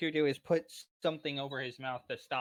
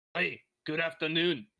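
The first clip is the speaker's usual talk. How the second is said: put-on gruff dwarf voice with quasi-Irish accent; 3 dB louder than usual. Repeating a dwarf character's greeting as an impression, gruff quasi-Irish dwarf voice. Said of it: "was my impression of it".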